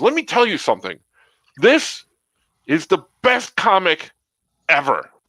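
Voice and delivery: put-on heated angry rant, high and swooping. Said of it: "in an angry way".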